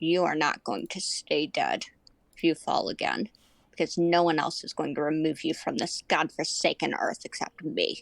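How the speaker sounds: very low, threatening, menacing voice. A character leans down close to the listener's face, in a low, low tone. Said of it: "speak in a low, low tone".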